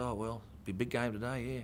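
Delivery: normal talking voice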